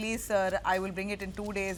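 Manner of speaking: usual speaking voice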